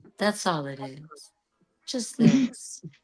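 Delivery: put-on very soft, sweet voice. Retelling a woman's reply at a bookstore reading: very soft, sweet voice. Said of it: "she has the softest, sweetest voice".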